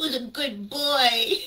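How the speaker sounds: put-on high baby talk. Contrasting how you talk to a puppy and to a boss, in puppy-talk voice. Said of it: "you don't use that voice with your boss".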